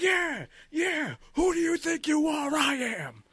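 mock very high, very slow, drawn-out swooping yell. Retelling a comedy video's ending, imitating Angry Bowler shouting. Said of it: "he starts shouting".

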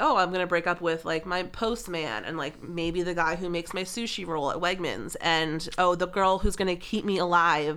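plain

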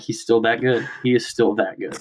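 hushed, under-the-breath whisper. Retelling what was muttered to Cody while watching: retelling a whisper. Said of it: "underneath my breath, I just whisper".

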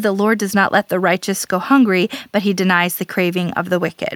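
ordinary talk

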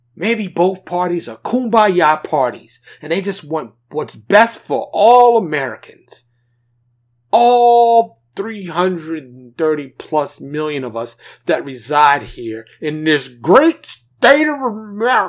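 loud, mocking, heavily sarcastic tone. Imitating how some people in the parties sound, heavily sarcastic imitation. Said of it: "that was terribly sarcastic".

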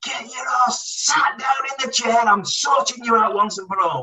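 very high, shrill, furious, acted top-of-lungs yell. Retelling how the manager shouted down the tunnel: imitating a manager shouting. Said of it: "he shouted at the top of his voice".

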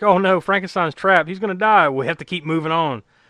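ordinary delivery

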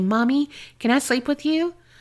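put-on small, frightened, pleading child's voice. Retelling a child's voice heard at night: imitating a scared little voice. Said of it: "I hear a scared little voice say".

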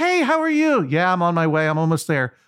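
high-pitched, cheery voice. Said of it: "he was so cheery".

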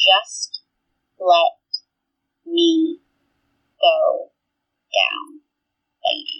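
strange halting growl, very slow, word by word. Retelling what he kept saying over and over: weird low growl. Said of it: "a weird, low growl, one word at a time".

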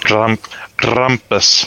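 put-on German accent with rolled r. Saying a card's name after being asked for a German accent: German accent. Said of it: "You have to have a German accent when you say that".

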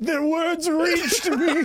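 put-on very high, foppish, pampered rich-boy dandy voice. Quoting a kid going down the slide, in an Aoyama voice. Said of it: "I like that that's your Aoyama voice too".

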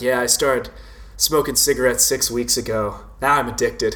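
mock flat, expressionless, matter-of-fact deadpan delivery. Recalling a funny line from In Bruges, deadpan Barry Keoghan line. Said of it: "Just the deadpan delivery".

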